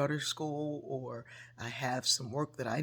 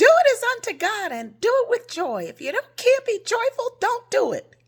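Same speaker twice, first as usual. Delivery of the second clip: very high, loud, sing-song, swooping put-on voice; 16 dB louder than usual. Quoting a woman's reply when the speaker complained about coworkers, imitating a high-pitched voice. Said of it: "She had a high pitched voice".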